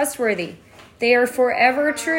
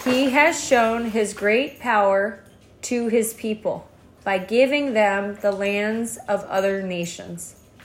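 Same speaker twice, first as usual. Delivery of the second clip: slow, clear delivery, each word spoken distinctly; 3 semitones lower than usual. Reading a passage aloud after being told they're still going fast: slow, clear reading. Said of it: "That's like a clear way".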